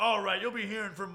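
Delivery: loud, high, angry threatening tone. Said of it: "And he was like".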